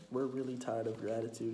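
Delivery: plain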